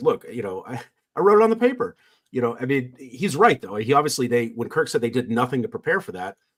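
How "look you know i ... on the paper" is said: put-on affronted, indignant, pitched-up, swooping protest. Speaker acting out what a man said on the show: mock-indignant. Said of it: "the amount of indignance in his voice".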